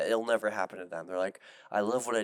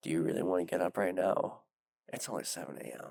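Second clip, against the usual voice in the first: mock seductive voice, imitated; 2 semitones lower than usual. Acting out the inner voice that urges staying in bed: imitating a seductive voice. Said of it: "that seductive voice".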